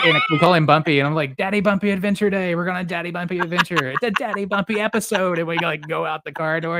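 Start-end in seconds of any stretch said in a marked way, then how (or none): 1.4-5.4 put-on, over-the-top animated hype, high and bright pitch. A father retells how he coaxes his young son out of the house, imitating own super animated voice. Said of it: "I have to be like super animated".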